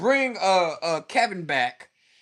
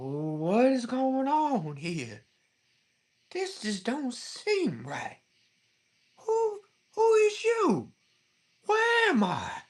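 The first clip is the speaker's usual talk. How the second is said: put-on old Southern voice, slow and swooping; 6 semitones higher, 4 dB quieter than usual.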